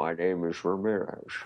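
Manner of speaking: put-on thick Scottish accent. Quoting Highlander's Ramirez to another speaker: Sean Connery impression. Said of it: "Sean Connery played a Russian U-boat captain with a thick Scottish accent".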